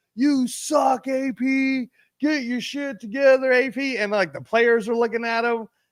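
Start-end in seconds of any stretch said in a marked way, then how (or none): 0.2-4.0 put-on high, drawn-out, jeering heckling yell. Retelling a fan in the stands heckling a player: imitating a fan yelling. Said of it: "he was yelling at A P".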